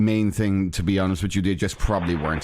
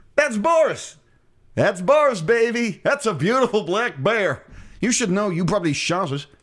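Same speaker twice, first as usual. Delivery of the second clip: very high-pitched put-on voice; 11 semitones higher than usual. Imitating a man in a video greeting his bear, imitating the son's voice. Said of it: "Why are you doing his voice like that?".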